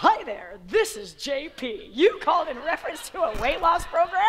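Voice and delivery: slow, on-air radio announcer delivery. Acting out a man's phone call to a weight loss lead, in j p's radio announcer voice. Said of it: "he sounded like a radio announcer".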